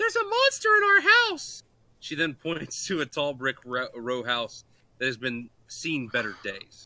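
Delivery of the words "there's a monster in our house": high, loud put-on little girl voice. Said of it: "the girl turns to you and says".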